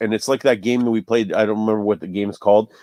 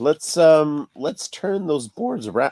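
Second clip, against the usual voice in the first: high voice cracking and breaking mid-line; 5 semitones higher than usual. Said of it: "my voice cracked".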